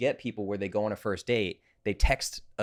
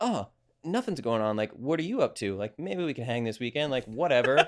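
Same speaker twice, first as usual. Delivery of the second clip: put-on casual, breezy, offhand nonchalance; 3 semitones higher than usual. Retelling an anxious dater replying to a text: imitating someone playing it cool. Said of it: "I have to play it really cool".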